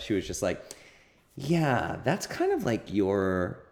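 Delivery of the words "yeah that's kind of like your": hesitant, timid, very slow, drawn-out delivery. Retelling how a therapist first named a term: imitating someone speaking timidly. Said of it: "she was so timid about it".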